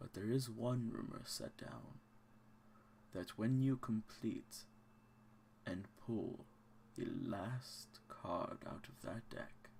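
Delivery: slow, unhurried, drawn-out ancient mummy voice. An ancient mummy explains to the others, slow, ancient tone. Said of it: "being a mummy that's lived for millennia. / he says with sort of a smile that comes through underneath the wrapping. / and he speaks with like a slow, of course, ancient tone, / he says with sort of a".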